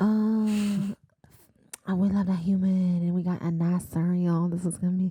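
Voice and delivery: sudden Southern drawl with drawn-out "oh". Retelling a book scene where the Naga attack Feyre: sudden southern accent. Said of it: "What accent was that?".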